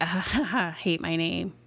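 put-on nonchalant chuckling. Retelling a police interrogation, imitating the suspect: imitating a chuckling suspect.

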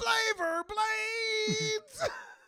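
very high, very slow, wailing cry.

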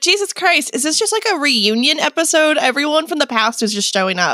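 normal talking voice

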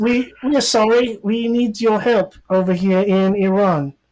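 put-on British accent. Speaker retells what someone said to them, in a british accent. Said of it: "It was it was in a British accent though".

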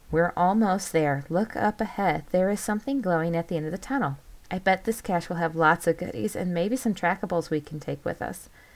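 ordinary delivery, nothing marked

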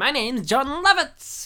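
high, slow, drawn-out comic actor voice. Describing an actor's usual voice, then doing a John Lovitz impression. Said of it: "he sounds like this".

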